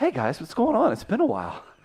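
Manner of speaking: put-on Boston accent with swinging pitch. Greeting the others as a guest on the show: Mark Wahlberg impression. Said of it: "Mark, are you here?".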